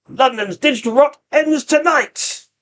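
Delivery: high, machine-like, metallic cyborg villain voice. Game master voices the villain confronting the players: metallic booming villain voice. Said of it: "His voice has kind of got a metallic-y sound to it".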